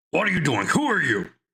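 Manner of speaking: high, called-out voice, like a guard. Voicing a guard who sees intruders come in: yelling guard. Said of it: "one of them yells".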